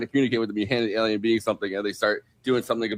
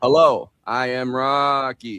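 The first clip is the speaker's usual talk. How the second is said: very slow, flat, robotic monotone with no inflection. Describing the voice chosen for Rocky, then doing a flat robotic Rocky voice. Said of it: "this flat, monotone, kind of robotic, like almost A I kind of thing".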